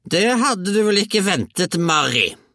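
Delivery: shrill, very high, loud shout. A narrator reads a grandmother calling from the roof to the mother, shouting. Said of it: "ropte bestemor".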